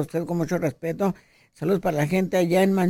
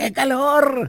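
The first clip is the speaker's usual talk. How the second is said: put-on shout, higher pitch; 7 semitones higher than usual. Recalling a movie theater crowd, retelling a shout from someone up front. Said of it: "Gritaba alguien por allá enfrente".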